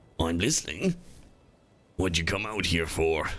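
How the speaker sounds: sea monster creature speaking voice. Game master voicing a plesiosaur that rises and addresses the players. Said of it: "I'm gonna regret that voice".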